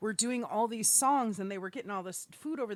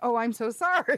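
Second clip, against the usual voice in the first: loud, fake sympathetic tone, put on for show; 7 dB louder than usual. Retelling how they pretend to feel sorry for someone: imitating pretended sympathy. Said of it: "we pretend".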